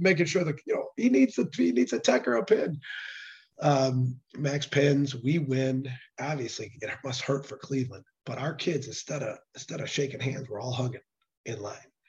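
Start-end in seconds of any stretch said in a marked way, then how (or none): 0.7-2.8 high-pitched mock yelling scream. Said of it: "All of a sudden, I'm screaming".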